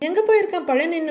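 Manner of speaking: plain reading voice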